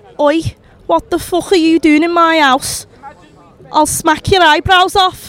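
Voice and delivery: loud Liverpool-accented ghost. Asked for an impression of a Liverpool ghost about to haunt someone, Liverpool ghost accent. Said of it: "Can you do an impression of a ghost from Liverpool".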